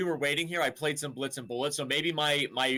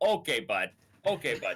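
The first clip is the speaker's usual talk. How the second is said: easygoing, slow, drawn-out put-on Canadian accent; 3 semitones lower than usual. Repeating a casual phrase the way they say it in Canada, Canadian accent. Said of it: "As they say in Canada".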